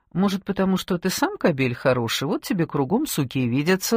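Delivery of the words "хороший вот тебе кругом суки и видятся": ordinary delivery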